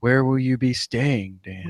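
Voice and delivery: very low, flat, creepy deadpan voice. Recapping an episode, imitating the dad questioning his son, deadpan creepy Daddy Boromir voice. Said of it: "The uh, deadpan creepiness".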